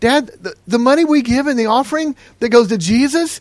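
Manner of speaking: put-on high, loud, incredulous child voice. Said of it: "he was incredulous".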